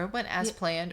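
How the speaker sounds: ordinary talk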